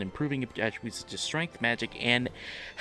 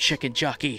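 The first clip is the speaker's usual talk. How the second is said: put-on whisper; 5 dB louder than usual.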